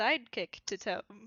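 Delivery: plain reading voice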